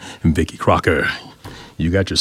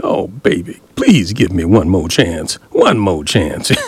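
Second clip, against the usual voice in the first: put-on sobbing, pleading boo-hoo cry. Describing how a person begs for one more chance, act out mock boo-hoo begging. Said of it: "you got to kind of boo-hoo".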